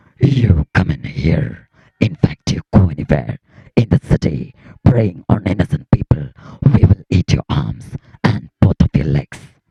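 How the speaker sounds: deep, loud monster voice. Doing a run of voice impressions; Venom voice. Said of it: "വെനത്തിന്റെ ശബ്ദമാണ്".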